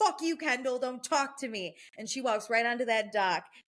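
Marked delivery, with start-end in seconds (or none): 0.0-1.8 heated, angry yelling with the voice pushed up high. Retelling a cast member's outburst at the table: imitating someone yelling. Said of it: "And she's yelling at the table".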